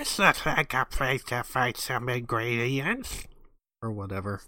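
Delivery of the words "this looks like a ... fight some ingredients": quacking cartoon-duck delivery. Retelling a video game scene, the speaker quotes a character in a Donald Duck impression. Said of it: "the best Donald Duck impression".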